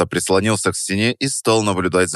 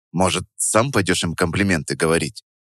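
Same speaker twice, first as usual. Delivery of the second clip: ordinary delivery, nothing marked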